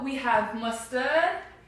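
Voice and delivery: slow, put-on fake British accent. Asked to describe the sauces: British accent. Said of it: "you want to hear me do a British accent describing the sauce?".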